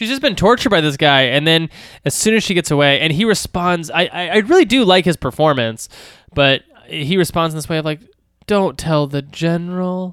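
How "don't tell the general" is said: very quiet delivery, higher. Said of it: "very quiet".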